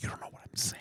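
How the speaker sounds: quiet, soft whisper. Talking about someone who took his headphones off, whispering softly. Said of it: "I'm whispering so softly you can't hear me".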